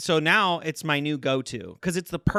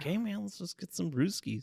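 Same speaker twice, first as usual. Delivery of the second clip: friendly Wisconsin buddy voice; 3 semitones higher, 9 dB quieter than usual. Doing an impression of a friend who calls beers brewskis: imitating a friend from Wisconsin. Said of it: "a solid impression".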